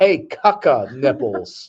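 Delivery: mock full-blast, top-of-the-lungs yelling. Retelling a shopping trip when she called out across the aisle: imitating her yelling at the top of her lungs. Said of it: "she pretty much yells at the top of her lungs".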